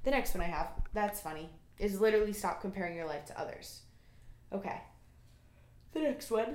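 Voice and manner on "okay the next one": speech broken by a yawn mid-phrase. Moving on to the next item on a list, yawning. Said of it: "Sorry, I'm yawning again".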